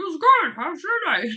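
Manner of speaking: very high, very loud squealing voice. From the kitchen, someone answers the speaker's question for Jax in Jax's voice. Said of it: "tries to tell me in a Jack's voice".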